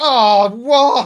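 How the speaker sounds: exasperated, annoyed, high, loud voice in background.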